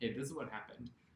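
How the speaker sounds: ordinary talk, nothing marked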